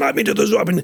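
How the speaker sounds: very high-pitched screaming. Retelling how an actor on stage screamed at the other actor: imitating someone screaming. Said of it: "they just started screaming at the other person".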